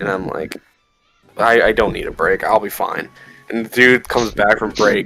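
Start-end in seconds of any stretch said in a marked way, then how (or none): none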